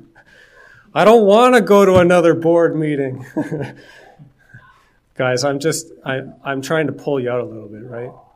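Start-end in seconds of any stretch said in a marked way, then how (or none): 0.0-3.2 loud, begrudging complaint. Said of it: "We don't begrudgingly say".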